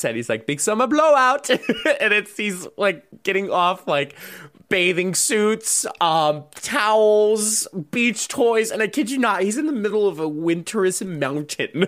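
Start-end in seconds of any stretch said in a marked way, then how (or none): 0.5-1.5 put-on loud, high Scandinavian accent, called out. Retelling the moment Anna hears a Scandinavian guy, in Oaken's Scandinavian accent. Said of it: "Scandinavian, so he has the accent".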